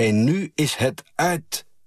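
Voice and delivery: high, drawn-out scream. A mother leans over the flower boxes and screams across the square: screaming. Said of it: "gaat er overheen hangen en schreeuwt".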